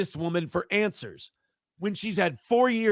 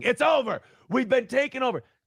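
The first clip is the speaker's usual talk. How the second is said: half-voiced, contained, ranting yell; 5 semitones higher than usual. Describing yelling at his wall about politics, imitating himself yelling. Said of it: "and I'm just yelling".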